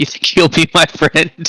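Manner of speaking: shouting. A player's character flies up and calls to others below, yelling down at them. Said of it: "I'm gonna like yell down at these guys".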